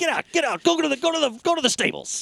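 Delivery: very high, barking commanding voice. Retelling a movie scene where a villain rallies his men: imitating barking orders. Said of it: "He's just barking at people".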